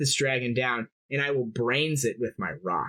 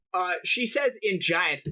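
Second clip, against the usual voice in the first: ordinary talk, nothing marked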